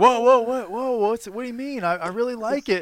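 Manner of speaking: fake innocence. Retelling a friend answering an angry stranger: imitating a friend feigning innocence. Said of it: "and then Chris is like".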